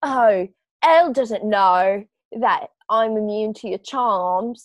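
put-on British accent. Quoting a movie character's line: imitating Chloe in a British accent. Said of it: "I'm simply about to do a British accent".

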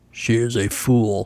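grunted delivery. Reading a story aloud, the wolf answers the leader's speech: grunting. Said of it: "the Bad Wolf grunted".

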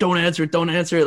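urgent, frantic scream, repeated. Retelling a friend awaiting a draft call yelling at his mom, imitating someone screaming. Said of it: "screaming at his mom".

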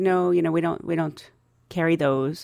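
plain

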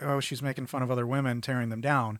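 normal talking voice

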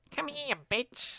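put-on nasal voice. Quoting a movie scene: Eugene Levy's nasal voice. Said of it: "Eugene Levy's nasal voice being like".

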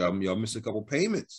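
ordinary talk

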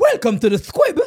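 dancehall deejay style delivery. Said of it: "me did have an Elephant Man impersonation".

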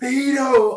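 top-of-the-lungs roar, very high, loud, drawn-out. Retelling how a girl on a train roared at his mate: imitating a girl roaring. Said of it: "roars at the top of her lung".

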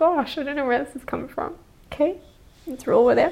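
very high, tearful voice, on the verge of tears. Podcast host moved by listeners' messages, on the verge of tears. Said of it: "I'm gonna cry".

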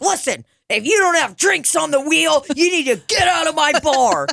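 mock screamed tirade, very high. Recounting what they said to a server at their bar, retelling own screaming. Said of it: "just screaming like usual".

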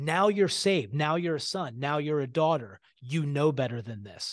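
mock blaming, accusing, reproachful tone. Speaker acting out what the enemy says, mock accusatory voice. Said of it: "it's an accusatory voice".

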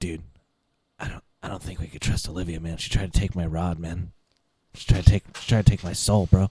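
hushed whisper. A player, in character, whispering to a fellow party member. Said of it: "I kind of whisper to him".

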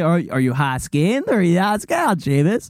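odd, weird, creepy voice. Imitating someone asking if he is in or out: Taylor impersonation. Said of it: "Was that your Taylor impersonation?".

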